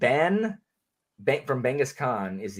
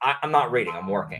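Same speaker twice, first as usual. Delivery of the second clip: ordinary talk, nothing marked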